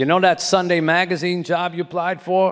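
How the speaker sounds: put-on heavy Boston accent. Retelling a long-distance phone call from a sports editor: imitating Fred Turner's Boston accent. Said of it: "a thick Boston accent".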